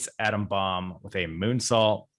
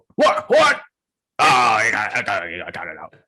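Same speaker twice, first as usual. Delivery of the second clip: loud, stretched-out, swooping wrestling commentator call; 7 dB louder than usual. Retelling a match's count-out as heard on commentary: Vince McMahon commentary voice. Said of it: "Vince on commentary is like".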